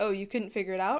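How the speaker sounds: plain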